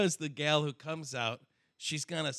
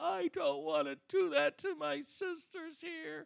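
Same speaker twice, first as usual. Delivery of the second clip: acted, very high, drawn-out sobbing voice; 12 semitones higher, 4 dB quieter than usual. Retelling a line from last night's Bachelor: imitating someone crying. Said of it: "she starts crying like".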